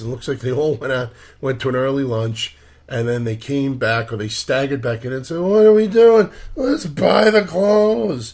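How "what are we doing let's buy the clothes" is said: put-on very high, loud, tipsy drunk voice. Retelling how everybody staggered back in from an early lunch, imitating a drunk person. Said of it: "I'm imitating a drunk person".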